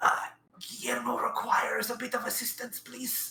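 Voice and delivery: high, theatrical stage whisper. Playing Guillermo turning to the group and asking for help: stage whisper. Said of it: "and stage whisper towards the group".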